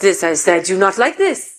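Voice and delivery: put-on French accent. Retelling what a woman from a business training said: french accent. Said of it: "I want to try to do a French accent".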